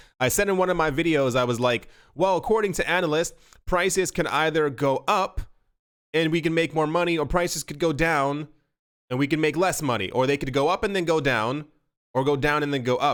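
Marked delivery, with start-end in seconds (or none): none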